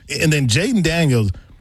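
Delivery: normal talking voice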